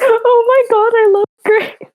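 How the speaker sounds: bright, very high, cheerful tone. Redoing an answer about grace on request, cheery voice. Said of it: "And cheery voice".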